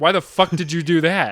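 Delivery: mock commanding officer voice. Retelling what a commanding officer would say: imitating a commanding officer. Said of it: "And he'd be like".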